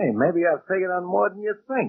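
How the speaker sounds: affected simpering delivery. Taunting Bert, who isn't sleeping well with the trains; simpering. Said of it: "what are you simpering about".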